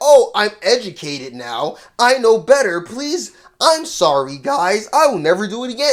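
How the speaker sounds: mocking, fake put-on tone. Retelling someone's apology after they repeated the mistake: mocking imitation of an apology. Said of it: "And then you sit here, be like".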